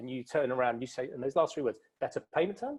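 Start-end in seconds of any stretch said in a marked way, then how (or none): 2.0-2.8 slight upward inflection at the end on "terms". Demonstrating a technique of repeating someone's last three words, upward inflection on terms. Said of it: "there's an upward inflection in my voice at the end".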